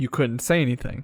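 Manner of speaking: normal talking voice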